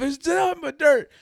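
very high, shrill, frantic, losing-it yell. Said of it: "I'm just going off".

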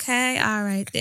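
put-on tired, over-it voice. Retelling a phone call from jail, imitating someone sounding over it. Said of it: "she's just sounded so over it".

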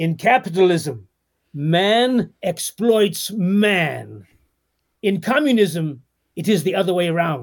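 put-on slow, drawn-out Russian accent, male voice. Telling a joke right after announcing the accent, in a Russian accent. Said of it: "I'm going to do my Russian accent now".

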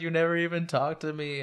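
put-on sobbing speech. Recapping a scene where she sobs over his dead body, imitating sobbing. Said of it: "while sobbing over his dead body".

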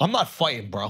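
mock dead serious deadpan tone. Retelling another speaker's reaction in face paint: imitating someone dead serious. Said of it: "you being dead serious".

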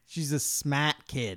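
New England accent, put on for fun. Praising a woman who finished uni: New England accent. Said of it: "Why did I do a New England accent".

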